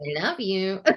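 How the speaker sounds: put-on recorded-message voice, like a toy. Describing a toy ball for army kids that plays a recording, imitating its recorded voice. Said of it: "That's why I said it in that voice".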